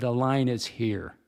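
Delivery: mock commanding, firm, authoritative delivery. Retelling confronting a woman about where the line is, in an authoritative voice. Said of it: "in an authoritative voice".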